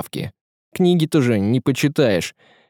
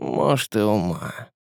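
soft, pensive musing, half to herself; 3 semitones lower, 5 dB quieter than usual. Narrator reads the hostess adding a remark while looking at one guest, thoughtful. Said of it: "прибавила задумчиво".

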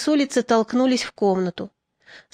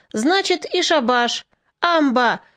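slow, drawn-out, calling voice; 2 semitones higher than usual. The men on the benches call out as the meeting nears its end, shouting. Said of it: "закричали со скамей".

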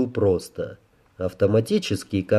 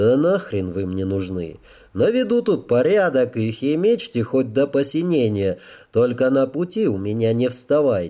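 ordinary delivery

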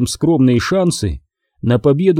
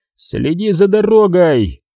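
half-shouted, mild yell; 4 semitones higher than usual. A man in a lurching van yells at the driver, yelling. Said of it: "заорал он на Гилкриста".

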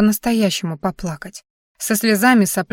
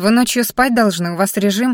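ordinary delivery

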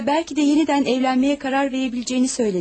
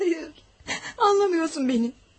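tearful, speaking through tears; 3 semitones higher, 5 dB quieter than usual. In a drama, answering someone who asks why they are crying, crying. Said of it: "Neden ağlıyorsun".

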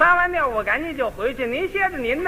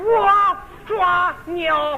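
Henan accent, pitched up; 5 semitones higher than usual. Showing how each region talks, answering at the door: Henan accent. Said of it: "河南人说话".

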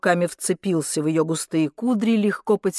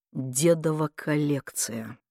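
dropped lower still, barely audible, hushed; 4 semitones lower, 7 dB quieter than usual. The nephew repeats his demand to his aunt, even quieter. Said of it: "повторил он еще тише".

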